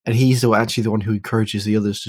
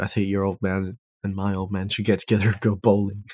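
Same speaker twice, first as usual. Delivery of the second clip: ordinary talk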